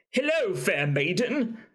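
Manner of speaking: very bad fake British accent, high-pitched. Wondering whether an actor used this accent in Game of Thrones: shitty Game of Thrones accent. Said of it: "Like the really shitty".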